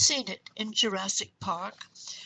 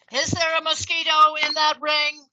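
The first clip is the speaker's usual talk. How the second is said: very loud, stressed, high-pitched voice; 6 semitones higher, 10 dB louder than usual. Retelling a stranger's question on the subway: imitating a very loud, stressed voice. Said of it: "asked in a very loud, stressed voice".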